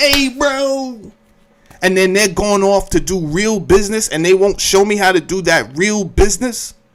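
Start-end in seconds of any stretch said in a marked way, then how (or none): 0.0-1.1 snide, fake-friendly, sarcastic mocking tone, drawn out, pitched up. Recounting someone slapping him five, imitating a sarcastic mocking greeting. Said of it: "slapping me five sarcastically and mocking like".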